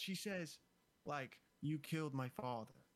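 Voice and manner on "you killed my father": level, expressionless delivery. Retelling Gaia's line from the fight: imitating Gaia's monotone. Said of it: "Super monotone".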